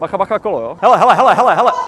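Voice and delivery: loud, high-pitched calling out.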